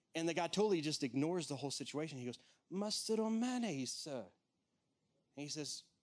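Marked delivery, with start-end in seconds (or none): 2.7-4.2 lighthearted put-on English accent, high-pitched, slow, drawn out. Retelling a court jester's lighthearted question to Graham Cooke: Graham Cooke's English accent. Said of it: "I'm gonna try to copy it".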